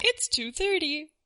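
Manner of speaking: tiny, high little robot voice. Voicing a talking potato clock telling the time: little robot voice. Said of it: "It's like a little robot voice".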